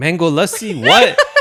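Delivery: high, loud, baffled, confused blurt.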